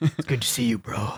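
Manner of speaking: gruff tough-guy voice. Showing how the voice could turn into a gruff Snake Plissken. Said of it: "Snake Plissken gruff dude".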